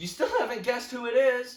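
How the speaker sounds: loud yelling, shouted. Retelling how you yelled at your friend who couldn't guess, retelling a yell. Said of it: "I yell at him".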